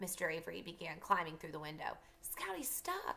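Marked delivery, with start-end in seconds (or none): 2.2-3.2 soft, breathy, barely voiced whisper. Jem watches Mr. Avery climbing through the window beside Scout; the words are breathed. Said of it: "breathed Jem".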